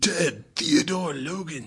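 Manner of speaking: high, swooping dramatic delivery with big pitch swoops. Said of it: "That was pretty good".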